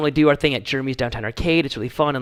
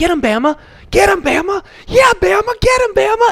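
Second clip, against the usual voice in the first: very high, loud, drawn-out cheering holler; 9 dB louder than usual. Retelling a match where a teammate cheered from the side: imitating someone yelling. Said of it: "he starts yelling".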